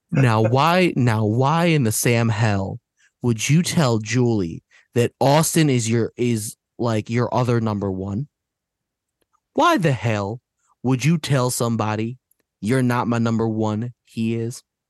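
passive, quietly angry. Speaker launches into a rant, with passive, quiet anger. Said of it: "the passive, quiet anger in my voice".

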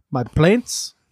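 blend of Italian, Russian, Irish. Correcting a listener who misheard the word plants: weird Italian, Russian, Irish accent. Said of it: "a weird Italian, Russian, possibly Irish accent".

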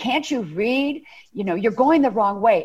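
put-on loud yelling in an elderly woman's voice. Retelling a grocery store scene: imitating an elderly lady screaming. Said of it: "this elderly lady screamed at me almost at the top of her lungs".

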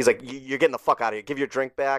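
put-on hostile, aggressive ranting man voice. Retelling a man at the bar ordering the comic out, retelling a hostile rant. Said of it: "he like gave me all this shit".

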